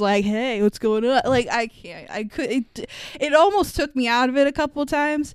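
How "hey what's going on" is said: put-on casual early-nineties mall-kid voice. Critiquing how actors changed their voices, doing a Chris O'Donnell impression. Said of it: "sounds like he walked out of the fucking mall in 1992".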